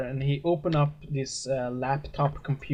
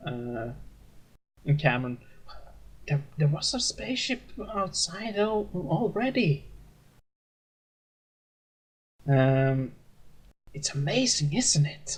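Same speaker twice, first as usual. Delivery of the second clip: mock whispering voice. Retelling a crowd scene, voicing somebody next to you, retelling a whisper. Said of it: "somebody kind of whisper next to you".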